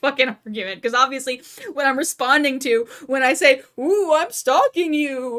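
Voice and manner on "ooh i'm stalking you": slow, mocking tone, as if it were absurd. Acting out a reply to a ridiculous accusation: imitating a mocking reply. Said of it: "I'm treating you as absurd".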